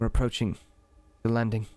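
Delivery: soft whispering. Voicing Leo telling the group at the back: whispering. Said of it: "And Leo whispers to the back".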